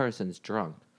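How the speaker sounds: ordinary delivery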